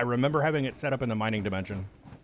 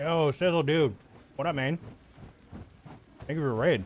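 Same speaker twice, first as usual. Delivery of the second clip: talking while chewing, mouth full; 4 semitones higher than usual. Thanking a streamer for raiding the channel, talking with mouth full. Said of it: "I got a mouthful of chicken right now".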